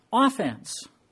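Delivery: slow OFFense with stress on the first syllable.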